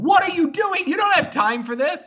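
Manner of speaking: piercing high-pitched yell. Retelling watching a play unfold live on TV: imitating own screaming at TV. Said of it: "I was screaming at my T V".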